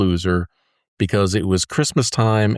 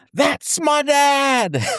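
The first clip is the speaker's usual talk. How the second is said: very high, proud shout with dad stretched out. Retelling seeing dad demonstrating at the mall: retelling a proud shout. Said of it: "I shouted out".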